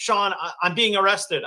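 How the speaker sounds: panicked, tearful voice. Retelling a phone call from Raven during a live production, imitating her frantic crying. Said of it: "she's frantic, and she's like crying".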